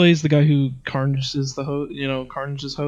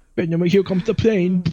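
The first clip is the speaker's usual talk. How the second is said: put-on high babyish baby talk voice; 5 semitones higher than usual. Mocking how a man talks to Venom, in a baby voice. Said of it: "baby voice".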